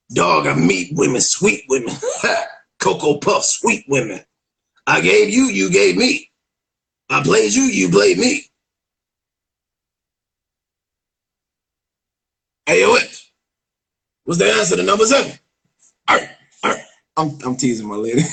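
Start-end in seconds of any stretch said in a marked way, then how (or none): 0.2-16.8 gritty, creaky put-on voice. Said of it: "I still to this day do impersonations of D M X".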